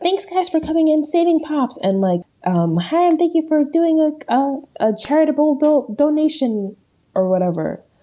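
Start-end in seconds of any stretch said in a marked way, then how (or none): 0.0-6.8 high-pitched announcer voice. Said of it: "They're like".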